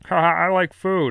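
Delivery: loud, big, belted-out animated cartoon voice. Trying an impression asked for by chat: Peter Griffin voice. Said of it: "what are you gonna say as Peter Griffin?".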